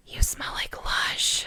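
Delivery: hushed, soft, close, quiet whisper. Retelling what a new friend said at a loud bar: imitating a whisper. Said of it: "she whispers in my ear".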